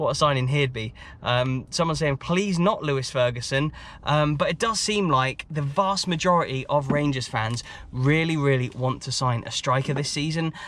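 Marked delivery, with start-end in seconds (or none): none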